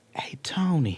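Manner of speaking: soothing, calming, melt-worthy voice. Retelling how Sharon greets the speaker: imitating Sharon's calming voice. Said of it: "that voice that it almost makes you melt".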